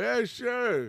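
put-on high dog voice with Bronx New York accent.

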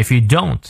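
heavy stress on the word "don't".

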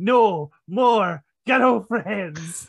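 stern, firm, scolding, barked delivery. Retelling a match where one wrestler choked another: imitating Andre the Giant yelling. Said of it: "legit choking Hogan in a corner and yelling".

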